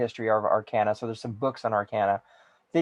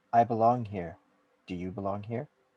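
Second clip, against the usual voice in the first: tiny, small, soft, slow voice; 2 semitones lower, 5 dB quieter than usual. Voicing a voice heard from behind a player: small voice. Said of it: "a small voice".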